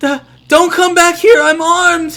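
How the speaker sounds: very high-pitched, very loud small shout. As a lock clicks, someone shouts from the other side of the wall, small shouting voice. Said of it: "you hear a small voice shout".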